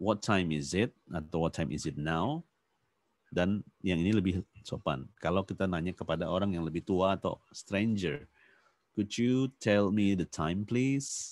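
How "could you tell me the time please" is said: pitch lifting upward at the end on please. Lesson on polite English questions to a stranger, rising intonation at the end. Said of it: "Jadi rising intonation. Intonasinya naik".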